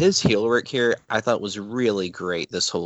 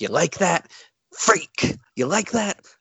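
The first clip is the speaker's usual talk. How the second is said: put-on worked-up wrestling manager voice, pitched higher; 9 semitones higher than usual. Retelling a wrestling manager's promo about Hogan, imitating Bobby Heenan getting worked up. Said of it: "now Heenan's getting worked up".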